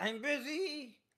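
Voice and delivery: very high yell, drawn out. Voicing a busy character called out by his wife: yelling in character. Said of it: "Embrick will yell out".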